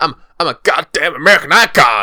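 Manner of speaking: loud, swooping, belted fake American accent. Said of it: "doing an impression of an American".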